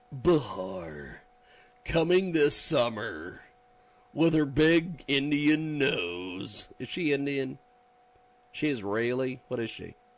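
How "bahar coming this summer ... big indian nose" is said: slow, dramatic action movie-trailer announcer voice. Introducing someone by name, doing the action movie trailer voice guy. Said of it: "I could do the action trailer movie voice guy".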